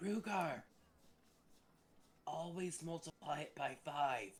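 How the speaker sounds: true half-whisper, soft and hushed, no voice. Aside to Rugar while the others are waiting, half-whispering. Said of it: "Are are you actually trying to whisper that".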